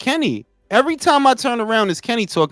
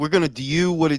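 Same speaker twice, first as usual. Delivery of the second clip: put-on Baltimore accent, unsure and halting; 6 semitones lower than usual. Trying to imitate how a fighter talks: imitating a Baltimore accent. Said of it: "I don't even know how to imitate that shit".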